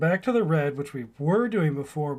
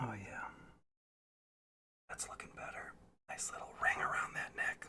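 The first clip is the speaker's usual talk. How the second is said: very quiet, hushed, breathy, barely voiced whisper; 5 semitones lower, 16 dB quieter than usual. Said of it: "I don't know why I'm whispering".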